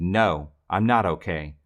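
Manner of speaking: put-on young child screaming, very slow. Retelling how Jay answered the sous chef at work: imitating a screaming third grader. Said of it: "he screamed".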